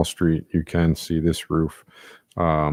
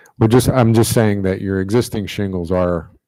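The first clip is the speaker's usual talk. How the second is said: louder, projected speaking voice. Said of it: "may you speak a little bit louder".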